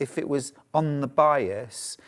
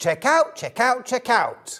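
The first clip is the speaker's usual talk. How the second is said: very high, shrill, loud host-style voice; 9 semitones higher, 5 dB louder than usual. Redoing the line for viewers after apologizing: John Scott style. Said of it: "I'll do it in a John Scott style".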